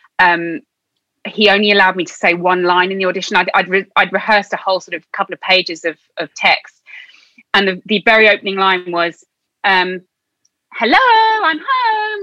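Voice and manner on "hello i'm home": mock, very high-pitched calling out. Retelling an audition's opening line, calling out to her mom: imitating calling out to someone. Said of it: "this kind of calling out to her mom".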